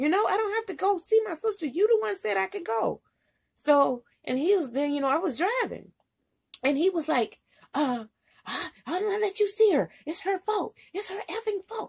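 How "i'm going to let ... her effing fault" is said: much higher mock screaming. Retelling how a man screamed at the speaker while the speaker drove; retelling someone screaming. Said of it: "Just screaming".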